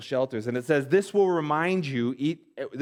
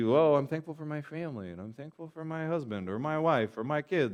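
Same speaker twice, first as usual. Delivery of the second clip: mock mushy sentimental gushing, quieter; 5 dB quieter than usual. Recalling April's family at the Thanksgiving table, mocking mushy sentimental gushing. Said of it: "everybody's just all mushy-gushy".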